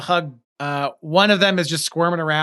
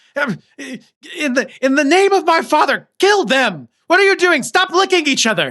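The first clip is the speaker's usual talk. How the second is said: put-on very high, loud, shrieking little boy scream; 10 semitones higher, 5 dB louder than usual. Voicing a boy who orders his guards to attack: little boy screaming. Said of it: "you hear the little boys scream".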